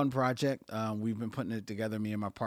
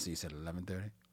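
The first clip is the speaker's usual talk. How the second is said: deadpan put-on film voice, quieter; 3 semitones lower, 8 dB quieter than usual. Showing how the film line really sounds: deadpan Bill Duke impression. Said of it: "he really is just, like, deadpan".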